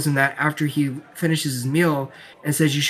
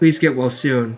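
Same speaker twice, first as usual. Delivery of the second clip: put-on emotionless flat voice; 3 semitones lower than usual. Retelling a scene where Mahito answers without emotion: emotionless Mahito voice. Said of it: "Mahito has, like, no emotion".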